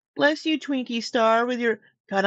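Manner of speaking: high, sweet, cutesy pet-talk voice. Saying bless you to Twinkie after a sneeze, in the animal voice. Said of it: "I'm doing the animal voice too".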